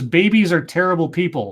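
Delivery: plain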